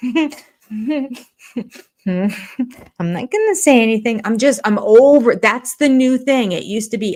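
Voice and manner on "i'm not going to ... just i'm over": slow, stifled laughter under the breath. Imitating a woman on the show, mock laughing under her breath. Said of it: "laughing under her breath and being like".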